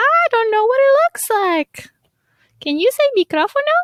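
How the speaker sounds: put-on very high, sing-song cartoon girl voice with swinging pitch. Talking about preschool shows, doing Dora's voice. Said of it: "I'll do her voice".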